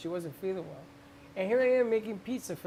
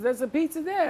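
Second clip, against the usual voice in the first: loud, high, put-on Italian accent; 8 semitones higher, 7 dB louder than usual. Retelling what the man who brought the sandwich said, in a put-on Italian accent. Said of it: "he's giving me this Italian accent".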